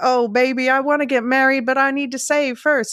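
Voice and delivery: high-pitched, put-on Western accent. Quoting a movie character's line about saving to marry: attempted Western accent. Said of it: "I can't do the Western accent".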